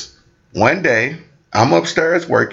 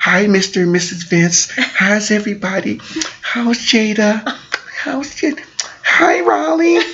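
put-on very high, slow, drawn-out nice-girl voice; 10 semitones higher than usual. Acting out the girl's greetings to the family: imitating how she talks. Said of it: "she talks like that".

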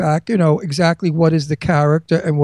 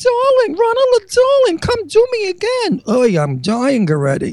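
very high, sing-song Boca lady voice. Retelling what a woman from Boca would say afterward: imitating a woman from Boca.

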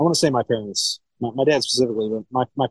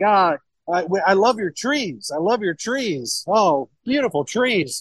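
overjoyed, rapturous, high gushing delivery; 7 semitones higher than usual. Retelling a winemaker's reaction to hearing Ohio: imitating someone elated. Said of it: "he's losing his mind. He's like, he's, like, elated".

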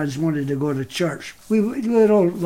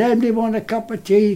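mock, high-pitched, loud called-out shout; 6 semitones higher, 4 dB louder than usual. Retelling calling out to everyone at the school: retelling own shout. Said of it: "and I shouted".

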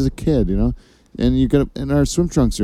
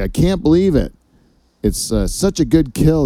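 put-on excited voice, much higher; 3 semitones higher than usual. Speaker telling how the driver ran over a jackrabbit, imitating the driver's excitement. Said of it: "he was like really excited".

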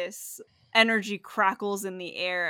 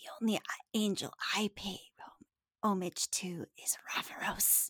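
breathy, hissed-out whisper; 7 dB quieter than usual. Narrating a game turn, voicing a character who looks at the wings: hissing. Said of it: "kind of hisses out".

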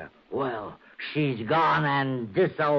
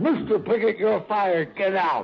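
dreadful, horrible-sounding, awful voice; 6 semitones higher than usual. Retelling a woman firing the speaker from the dark, in an awful voice. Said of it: "in this voice, this awful voice, she said".

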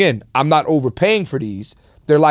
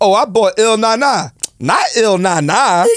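rhythmic bounce through each phrase, a touch higher; 7 semitones higher than usual. Showing how he imitates women's phrases: imitating a woman, bouncy phrasing. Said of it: "it's not the high-pitched voice, it's the bounce".

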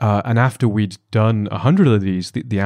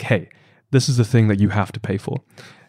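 put-on stern voice. Retelling how he reminded customers about paying: imitating his stern tone. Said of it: "very sternly look them in the eye and say".

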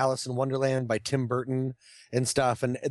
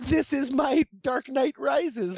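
put-on very high, slow small little-girl voice; 12 semitones higher than usual. Retelling a little girl's words at the movies: imitating a little girl's voice. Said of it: "hearing her little voice be like".

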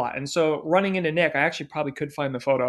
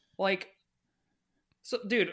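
normal talking voice

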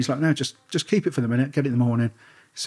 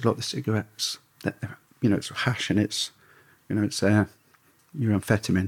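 lowered, hushed, secretive voice; 3 semitones lower than usual. Retelling what a man said to the speaker about dropping cigarettes, lowered voice. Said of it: "lowers his voice and just says".

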